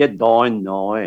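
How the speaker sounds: put-on Northern Irish accent. Talking about regional accents, the speaker demonstrates a Northern Irish accent. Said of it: "Like the Northern Irish accent".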